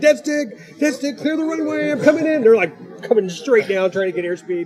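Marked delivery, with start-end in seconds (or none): 0.0-2.4 mock, very high, frantic, panicked screaming. Retelling older flyers whose model plane engines failed, retelling a scream. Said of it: "They just start screaming".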